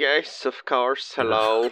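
creepy put-on voice. Answering a phone call in character as Robert: creepy Robert voice. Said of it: "perhaps less creepy".

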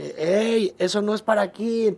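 indignant shouting in a high voice. Retelling how the crowd objected to a routine, acting out a shouted protest. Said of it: "empezaron a gritar".

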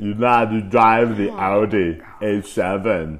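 very loud, belted Austrian accent. Giving a sample of the speaker's Arnold Schwarzenegger impression. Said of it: "I can give you my Arnold Schwarzenegger".

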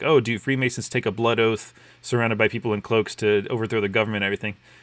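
ordinary delivery

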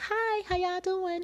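very high, tiny, little squeaky voice. Speaker describing their mother, imitating mom's squeaky voice. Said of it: "She got a little squeaky voice like".

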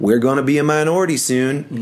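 high-pitched, put-on Southern accent. Retelling what people told the speaker at fifteen, in a Southern accent. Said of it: "that was a Southern accent".

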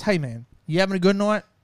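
smug, swaggering, cocky, arrogant tone. Retelling how a man at a bar grabbed his elbow: imitating a cocky, arrogant man. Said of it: "that just cocky, arrogant".

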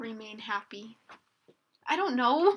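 sad, flat, very quiet murmur. Going around a group sharing goals, a speaker answers, said sadly. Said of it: "You said it so sad".

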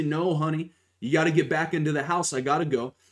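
play-acted gentle, kind, coaxing voice. Retelling a woman telling her dog to go home: imitating a nice, gentle tone. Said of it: "she says nicely".

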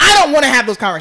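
put-on shout. Retelling an annoyed talk with a friend: retelling own yelling. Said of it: "I started yelling".

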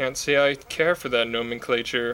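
utterly expressionless, totally deadpan delivery. Quoting Jesse Plemons's reply to Val, give a completely deadpan Jesse Plemons impression. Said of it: "in that completely deadpan Jesse Plemons way".

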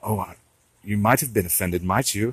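put-on British accent. Quoting a man's funny remark about manners and taking offense, in a british accent impression. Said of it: "trying to impersonate the British".

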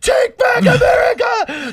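shrill, very high, pitched-way-up scream. Retelling a woman on tv at the convention: imitating a woman screaming.

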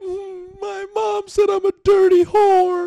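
put-on hysterical crying. Retelling a FaceTime call from her: imitating hysterical crying. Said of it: "she's hysterical crying".

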